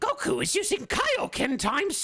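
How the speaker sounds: very high, slow, squeaky cartoon voice. Trying out voices among friends, the speaker does a Toad voice. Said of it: "That's Toad".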